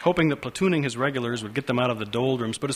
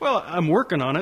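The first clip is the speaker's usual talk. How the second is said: hesitant, tentative, half-surrendering tone; 4 semitones higher than usual. Mocked by another man, he answers about his progress, tentative. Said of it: "with a tentativeness bordering on total capitulation".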